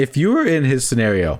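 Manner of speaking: breaking, cracked voice, cracking mid-phrase. Speaker poses a question to the other person, voice cracking. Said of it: "great voice crack right there".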